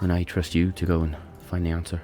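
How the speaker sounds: bassy, deep, heavy put-on Irish accent. In a role-play scene, a character speaks to a companion in an irish accent. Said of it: "Good Irish accent".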